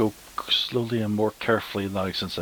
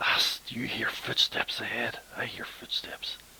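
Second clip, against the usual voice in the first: soft, hushed whisper; 3 semitones higher, 5 dB quieter than usual. Playing a character in a game, the speaker addresses the elf: whispering to the elf. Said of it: "I'll whisper to the elf".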